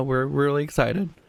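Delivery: sarcastic-sounding tone. Speaker recapping an earlier talk about what they accomplished, sounding sarcastic. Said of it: "that sounded very sarcastic".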